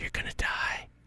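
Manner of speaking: put-on quiet whisper. Retelling taking turns at a video game with a brother: imitating a quiet whisper. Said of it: "quietly whispering".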